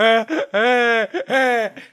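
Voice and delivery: put-on crying like straw in cup. Retelling crying at a party: imitating own past crying. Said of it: "it sounds like a straw going in and out of a McDonald's cup".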